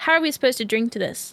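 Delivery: put-on, open disdain, scornful tone. Retelling what a grown adult said about a party game, in mock disdain. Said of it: "with obvious disdain".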